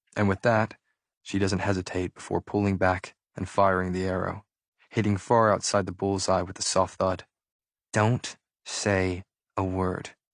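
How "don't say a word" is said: through gritted teeth, drawn out. Narrator reads her line after a missed shot, muttered through clenched teeth. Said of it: "she mutters through clenched teeth".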